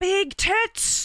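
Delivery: really loud, very high-pitched, shrill yell. Telling a story about a man leaving, retelling a really loud shout. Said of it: "he says really really loudly".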